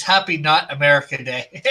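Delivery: ordinary talk, nothing marked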